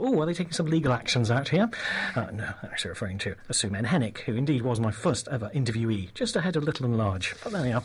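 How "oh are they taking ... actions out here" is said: ordinary delivery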